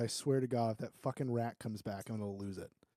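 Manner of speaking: low, quiet muttering to oneself. A player voices his character's reply, muttering under his breath. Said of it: "Sage says under his breath".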